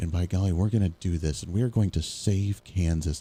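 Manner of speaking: stern, strict, hushed half-whispered stage whisper. Imitating how the state governor talks at press conferences: stern, half-whispery. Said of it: "But she talks like this, and she's very stern".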